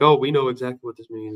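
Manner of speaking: ordinary talk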